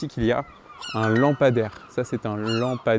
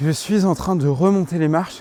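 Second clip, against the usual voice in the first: slightly breathless, much higher pitch; 6 semitones higher, 4 dB louder than usual. Climbing back up the stairs while talking to the audience, a bit out of breath. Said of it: "Je suis un peu essoufflé".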